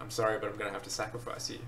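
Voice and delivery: ordinary talk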